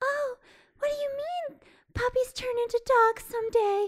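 breathy, very high voice. Discussing a movie, imitating one of its characters: breathy voice. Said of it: "had like the breathy voice to her".

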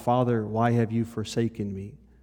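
normal talking voice

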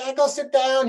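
very shrill, high-pitched, cross and angry voice. Recalling impersonating an aunt tanning on the beach, imitating an angry aunt. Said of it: "being angry at me like".

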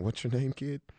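hushed, soft little half-whisper. Acting out a coach hugging a crying player: imitating someone half-whispering. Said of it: "He's whispering".

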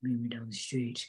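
fatherly character voice. Retelling a TV scene where the dad calls Anna: impression of the dad. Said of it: "So the dad's like".

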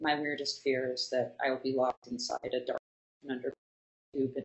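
put-on monotone voice. Retelling what a guest said about their weirdest fear: imitating a guest's monotone. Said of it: "just in this monotone".

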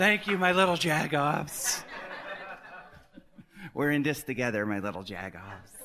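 put-on emotional pop star voice. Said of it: "I'll be just like her, emoting".

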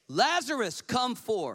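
loud, high cry with loud voice. Reading scripture aloud to the congregation, Jesus calling out: crying out loudly. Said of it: "he cried with a loud voice".

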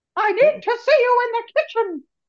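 very high, loud, belted puppet diva voice. Imagining a Muppet version of Everybody Loves Raymond, do Miss Piggy as Deborah. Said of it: "That's Miss Piggy as Deborah".

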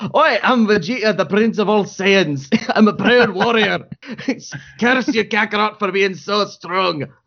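high Scottish accent. Speaker shows how they want to play Vegeta when trying out, Vegeta in a Scottish accent. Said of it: "really want to play Vegeta as Scottish".

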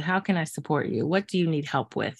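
ordinary delivery

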